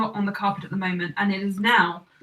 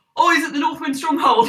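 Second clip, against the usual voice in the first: high-pitched, yelled-out shout; 6 semitones higher, 4 dB louder than usual. Voicing another character who shouts out an answer: shouting. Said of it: "Big Ed shouts out".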